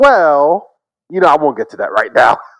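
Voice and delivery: full-on put-on Southern accent. Retelling how a lawyer cross-examined a witness: imitating a put-on Southern accent. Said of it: "he puts on a Southern accent".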